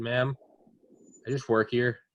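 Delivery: play-acted defeated voice, flat, all air let out. Retelling answering a woman who addressed her, retelling a deflated reply. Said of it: "I've never heard like a more deflated voice".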